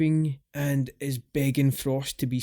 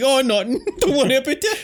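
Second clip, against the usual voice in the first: pathetic put-on voice, higher and louder; 11 semitones higher, 8 dB louder than usual. Retelling a movie scene where Perro denies anything is inside: pathetic Perro imitation. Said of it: "Perro attempts this, like, pathetic".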